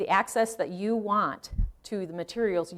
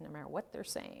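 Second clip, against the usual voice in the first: much quieter, hushed, under the breath; 4 semitones lower, 16 dB quieter than usual. Presenter going over genealogy websites, adding a sotto voce aside. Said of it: "[speaking in sotto voce]".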